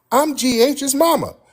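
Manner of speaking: very high, up-in-the-rafters woman's voice. Retelling a woman's answer when asked her name, in a very high-pitched voice. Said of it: "She said in a very high-pitched voice".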